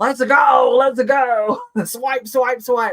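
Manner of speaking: put-on young, drawn-out live-sale seller hype voice. A speaker going through letters, joking she sounds like a Whatnot seller, Whatnot live-seller voice. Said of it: "I'm sound like one of those young Whatnot people selling".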